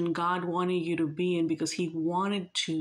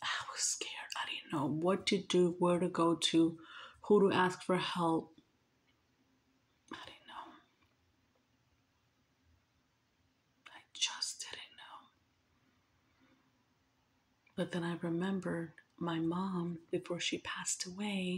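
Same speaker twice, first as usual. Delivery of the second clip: soft, hushed whisper; 6 dB quieter than usual. Telling a personal story about being scared, whispering. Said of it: "Why am I whispering?".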